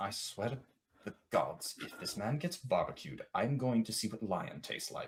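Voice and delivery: very quiet, low mutter under the breath. Voicing a character speaking aside, muttering under his breath. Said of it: "he's going to mutter under his breath".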